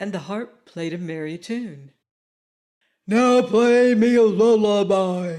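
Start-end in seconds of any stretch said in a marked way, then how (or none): 3.1-5.4 bellowing, loud, slow roar in giant voice. Reading the tale aloud, voicing the giant ordering his harp, roaring. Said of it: "roared the giant".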